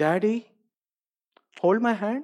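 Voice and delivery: small, timid, meek, anxious voice. Retelling a scared little girl asking her dad, imitating a meek little voice. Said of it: "in this meek little voice, in which you could hear her anxiety".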